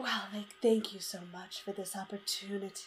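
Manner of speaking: very quiet, oddly gentle, weird soft voice. Retelling what Alexandria said: imitating Alexandria's weird soft voice. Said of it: "does her weird soft voice again".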